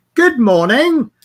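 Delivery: loud, high-pitched sarcastic tone. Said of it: "Reacted to my sarcasm".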